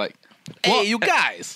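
put-on New York gangster accent. Guessing how the movie's hero would talk, in a new york gangster accent. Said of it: "he just sounds like a New York gangster".

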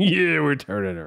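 high, gravelly airline pilot voice. Acting out the pilot's reply: imitating the pilot. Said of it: "And the pilot says".

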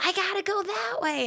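very high-pitched shouted yell. Speaker retells yelling back at a lady in the car behind, retelling a yell. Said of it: "And I yell".

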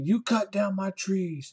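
imitated angry male yell. Telling how a man threw a fit, the speaker retells him yelling. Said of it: "He just starts yelling at me".

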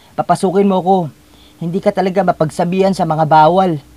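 high, loud, raging, furious shout. Ami shouts at Nes, who has locked the door, shouting. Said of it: "pasigaw na sabi ni Ami".

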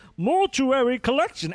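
put-on voice, very high pitch. Saying a title, trying it like Aragorn at another speaker's request: Aragorn voice. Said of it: "try it like Aragorn".

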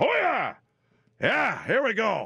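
put-on very high, animated, swooping, cool old-dude voice. Telling others what Al Pacino is like now, quote him in an Al Pacino impression. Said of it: "So he's like".

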